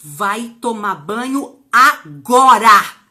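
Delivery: mock very loud, very slow, firm tone. Acting out a mother's order, in a mock-commanding tone. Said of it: "ela já manda assim com aquele poder também da entonação".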